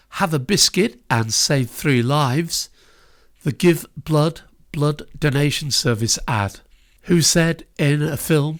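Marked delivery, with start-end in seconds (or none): none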